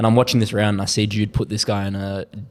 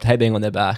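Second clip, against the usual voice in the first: ordinary delivery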